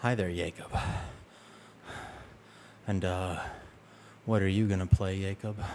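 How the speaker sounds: asmr-style speaking voice. Describing greeting viewers on stream, showing an accidental asmr voice. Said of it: "I accidentally do A S M R".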